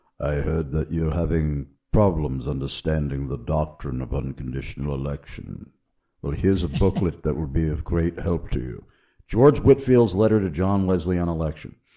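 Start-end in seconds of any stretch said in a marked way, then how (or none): 0.2-8.9 put-on very deep British gentleman's voice and accent. Retell how your dear friend approached you to help, in Nigel Stone's very deep British accent. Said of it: "he said in his very deep British accent".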